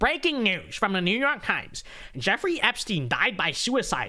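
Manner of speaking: put-on nerdy voice. Speaker reads a news report aloud in a put-on nerdy voice. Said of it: "Let me read it in a nerd voice".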